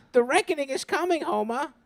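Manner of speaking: high-pitched cartoon-style voice. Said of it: "Flanders would definitely be a QAnon guy".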